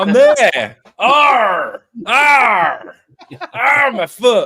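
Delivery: very loud, very slow, high pirate bellow. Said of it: "to a pirate".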